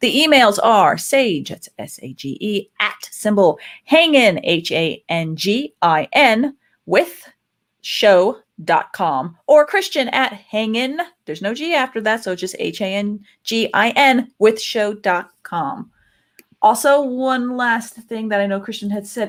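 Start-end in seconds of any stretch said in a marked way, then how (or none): 0.0-15.9 very slow, careful, letter-by-letter spelling out. Podcast host spelling out contact emails for listeners, as slowly as possible. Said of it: "I'm going to say it as slowly as possible".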